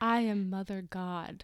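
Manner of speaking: dramatic, theatrical reading. Reading a cult leader's website aloud after being asked: dramatic reading. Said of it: "let's do a dramatic reading".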